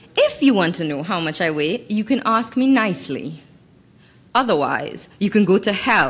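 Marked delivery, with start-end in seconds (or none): none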